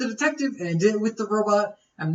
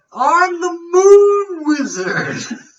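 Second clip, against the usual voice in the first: very high, very slow, loud, drawn-out shout; 10 semitones higher, 8 dB louder than usual. Acting out the moon wizard for another speaker: moon wizard yelling. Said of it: "Like him yelling".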